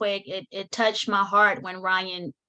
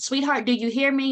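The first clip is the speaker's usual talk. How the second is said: mock pushy, demanding, aggressive tone, pitched high; 5 semitones higher than usual. Retelling how a teacher kept addressing an unresponsive student, mock-aggressive tone. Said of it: "But kind of in an aggressive tone".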